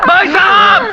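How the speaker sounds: shouting out. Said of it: "ये चाचा क्यों चिल्ला रहा है?".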